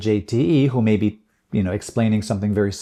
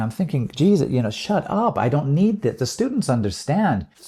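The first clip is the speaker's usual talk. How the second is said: ordinary delivery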